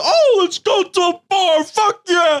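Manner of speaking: very high, slow, gleeful, put-on drawl. Retelling a friend's words before going to a bar, imitating him being all happy. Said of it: "you were like all happy".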